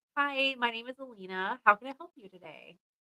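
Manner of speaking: soft, fake-nice, put-on helpful customer service voice. Showing the voice she uses working in customer service, in fake customer service voice. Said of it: "That's my customer service voice".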